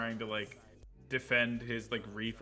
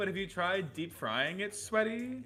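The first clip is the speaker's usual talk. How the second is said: high, swooping, put-on Valley Girl voice; 8 semitones higher than usual. Designing a vapid character and voicing her lines, in a put-on valley girl voice. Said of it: "like it's a Valley Girl".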